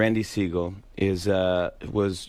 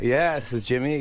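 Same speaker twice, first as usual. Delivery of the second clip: normal talking voice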